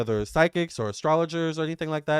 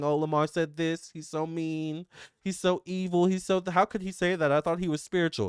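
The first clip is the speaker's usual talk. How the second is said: tearful, whiny, crying woe-is-me tone; 3 dB quieter than usual. Mocking people who complain about him: mock crying complaint. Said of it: "I don't wanna hear the crying".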